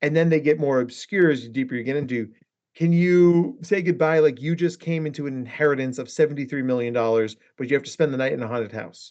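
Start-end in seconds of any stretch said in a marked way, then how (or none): none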